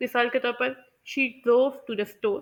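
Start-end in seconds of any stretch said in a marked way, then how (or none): 1.1-2.4 stress on drove and store, not to and the. Sentence stress example on content words: stress on drove and store. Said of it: "मैंने किस तरह से drove और store को emphasise किया है, और टू और द अनस्ट्रेस्ड".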